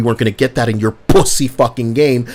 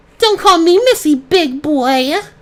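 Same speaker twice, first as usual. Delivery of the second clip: very high, slow, playful teasing. Acting out a playful girl who objects to being called Missy: imitating a playful girl. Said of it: "a playful girl".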